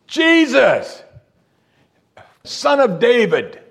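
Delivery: very high, very slow, drawn-out screaming. Retelling a man crying out in a scene, screamed loudly. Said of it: "He screamed it. ... He's screaming this".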